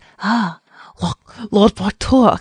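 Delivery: badly done, failed French accent. Reading a listener's question, the speaker quotes the king's greeting in a bad french accent. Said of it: "How did they even say it with like a French accent?".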